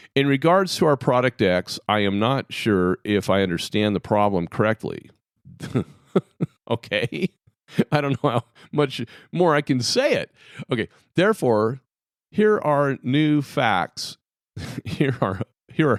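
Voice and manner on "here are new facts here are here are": high, giggling, laughing through the words. Stating facts about a product for a response, laughing while speaking. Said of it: "Sorry, I was laughing".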